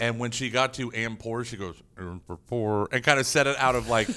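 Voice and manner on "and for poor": mimicked side-of-mouth mumble, much slower. Retelling how she said one phrase: imitating a side-mouth mumble. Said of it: "mumbled it out of the side of her mouth".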